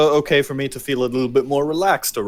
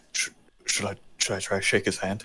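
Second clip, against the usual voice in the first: very quiet, halting, stumbling whisper; 6 semitones lower, 9 dB quieter than usual. Asking another player a quiet question in character: whispering. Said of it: "I'm gonna whisper to Emma".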